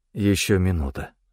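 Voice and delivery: ordinary delivery, nothing marked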